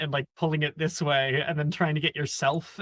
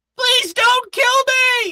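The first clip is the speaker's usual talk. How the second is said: shrill, full-volume, terrified shrieking scream; 9 dB louder than usual. Narrating a game as everything around withers and dies, [name] screaming. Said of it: "You can hear [name] scream".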